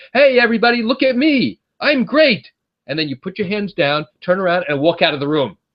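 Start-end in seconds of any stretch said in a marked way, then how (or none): 0.2-2.5 large, loud scream, pitched way up. Acting out a stranger at a party who raises their hands, screaming out loudly. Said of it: "scream out in a large, loud voice".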